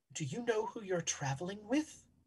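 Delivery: very soft, quiet, secretive hushed murmur. In a game, a gentleman approaches a traveler and asks very quietly. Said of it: "he'll very quietly say".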